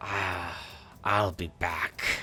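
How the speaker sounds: put-on whispering character voice. Voicing the Dalgaunt as it looks at the party: Dalgaunt whispering. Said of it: "he kinda whispers something".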